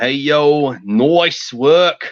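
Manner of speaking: put-on poor, clumsy Australian accent, very slow and drawn-out. Speaker quoting their friend Lion Tiger Man twenty-three, poor Australian accent. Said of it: "In my poor attempt at doing Australian".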